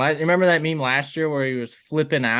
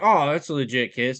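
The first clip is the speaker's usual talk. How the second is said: normal talking voice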